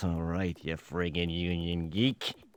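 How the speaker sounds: barely audible, very low mutter under breath. Scolding the voice actor who won't just read the copy: under breath. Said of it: "[UNDER BREATH]".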